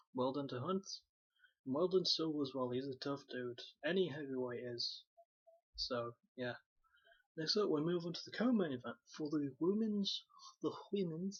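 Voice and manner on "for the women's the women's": cartoonish voice with a vague Russian accent. Recapping a fight card, repeating his words in a Stewie Griffin voice, vaguely Russian. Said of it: "he suddenly turned into Stewie Griffin, with a vaguely Russian accent".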